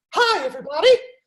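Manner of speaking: very high, loud little cartoon mouse voice. Greeting the five-and-under audience members: Mickey Mouse voice. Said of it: "Mickey Mouse voice".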